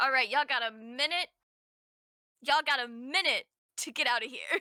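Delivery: loud yelled voice. Game master voicing Baxter calling out to whichever one: Baxter yelling. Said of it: "he just kind of yells".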